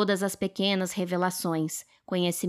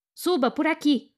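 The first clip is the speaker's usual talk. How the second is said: sudden, involuntary high-pitched shouted cry; 9 semitones higher, 4 dB louder than usual. After an explosion shakes the house, Mrs. Morris shouts involuntarily: shouted. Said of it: "a senhora Morris gritou".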